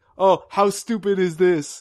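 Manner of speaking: put-on loud, slow, cheesy, clichéd Italian accent. Retelling a scene where a man shows off baby clothes, in a stupid cliched Italian voice. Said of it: "in like a really stupid cliched Italian voice".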